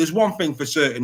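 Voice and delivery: ordinary talk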